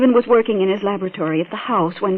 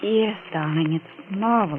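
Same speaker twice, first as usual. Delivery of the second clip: flat, unexcited, unenthusiastic delivery; 7 dB quieter than usual. Valerie answers Mister Denton's news that he won't be blind, flat and unexcited. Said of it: "You don't sound very excited".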